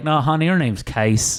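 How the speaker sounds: put-on Southern US accent. Retelling how others kept correcting the speaker's name: southern accent. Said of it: "say Qais with a southern accent".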